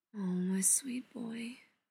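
very quiet, slow murmur under the breath. A mother comforts her hunched, upset son, murmuring. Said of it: "she murmurs".

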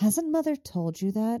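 high, put-on good little girl voice. Narrating a story, read a character's question in her best good little girl voice. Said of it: "in her best good little girl voice".

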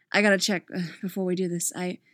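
ordinary delivery

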